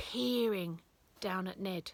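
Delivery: ordinary delivery, nothing marked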